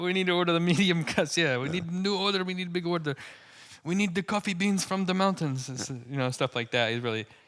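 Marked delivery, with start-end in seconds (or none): 0.0-5.7 badly done put-on Russian accent, pitched up. Imitating how a man talks, in a bad Russian accent. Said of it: "It's a bad Russian accent".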